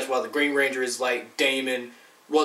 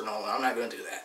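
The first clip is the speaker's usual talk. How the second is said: ordinary talk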